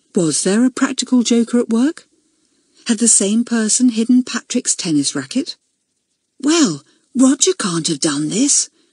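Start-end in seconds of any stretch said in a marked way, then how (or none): 6.4-8.7 whispering. Elizabeth speaks to Julian at dinner time, whispered. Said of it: "she whispered to Julian".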